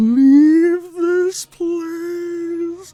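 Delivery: very high, muffled voice echoing as if inside something. Narrating a game scene, voicing a voice in the player's mind, muffled and echoing. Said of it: "a muffled voice echoes in your mind".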